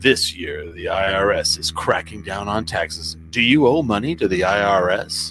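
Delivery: mock ominous ad announcer voice. A speaker mimics an IRS warning ad, in a mock-ominous ad voice. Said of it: "I'm going to give that ominous tone".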